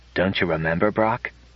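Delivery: soft, gentle tone. Speaking to another being, he asks softly. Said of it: "he asked softly".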